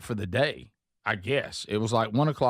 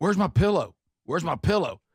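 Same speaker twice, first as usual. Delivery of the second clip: mock irritated, insistent, pitched-up, somewhat angry tone; 6 semitones higher than usual. Retelling waking at night to find the pillow gone: imitating own angry asking. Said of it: "She said kinda angrily".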